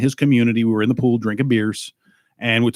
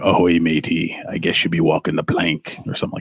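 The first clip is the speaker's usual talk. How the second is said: put-on pirate voice, much lower pitch; 6 semitones lower than usual. Recalling a voice audition for a pirate, showing the pirate voice. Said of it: "a voice audition for a pirate".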